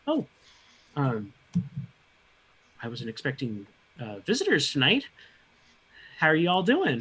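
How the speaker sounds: swooping dwarf woman character voice. Voicing a dwarven woman greeting visitors at her door: voicing a dwarven woman. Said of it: "she's like".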